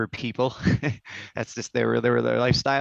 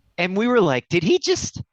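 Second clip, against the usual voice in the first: usual speaking voice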